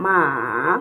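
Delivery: ma dipping down then up, falling-rising third tone. Teaching tones, numbering each ma, saying the third with a falling then rising tone. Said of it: "The third one has the falling and rising tone".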